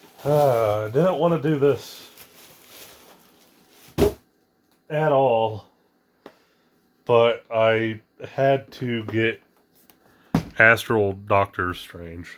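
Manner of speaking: slow, audibly disappointed delivery. Reacting to an unwanted result; disappointed. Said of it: "You can hear the disappointment in my voice".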